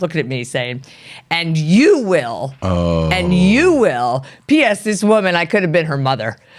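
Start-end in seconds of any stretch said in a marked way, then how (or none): 1.3-4.2 put-on very slow, sing-song, swooping scolding tone. Retelling a client scolding them across the table: imitating a raised voice. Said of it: "had a raised voice the entire time".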